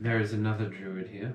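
calmly and quietly. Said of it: "quietly, calmly say".

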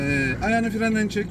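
slow, deliberate, careful delivery.

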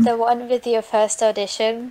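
ordinary talk

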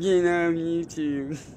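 mocking whiny voice. Repeating another man's words in imitation of him, mocking little whiny voice. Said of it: "His little whiny voice".

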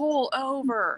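mock shouting, high-pitched and short. Retelling a driver pulling up at a red light, retelling someone's yell. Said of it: "yelling at him".

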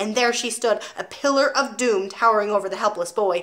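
plain reading voice

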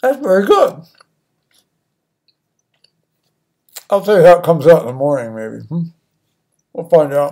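speaking with a mouth full of food. Eating supper while telling a story to viewers: talking with mouth full. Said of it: "Pardon me talking with my mouth full".

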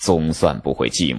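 ordinary delivery

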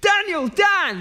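put-on shouting. Retelling how a man shouted after a stranger walking away: imitating someone shouting. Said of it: "He stands up and he shouts".

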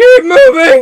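high, loud, frantic yell.

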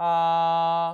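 a held flat and high, first tone. Demonstrating a vowel sound placed in the first tone: high level first tone on 아. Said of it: "일성으로 놓을게요".

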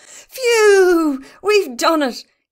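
loud gasp, way up high, very slow and drawn-out. Barney speaks just after the crest hits the ground: gasping. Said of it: "he gasped".

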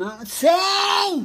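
loud, slow, close shouting. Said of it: "não grite no meu ouvido".

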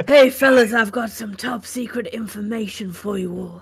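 speaking in a whisper. Telling the party secret information in character: whispering. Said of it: "I need to whisper this".

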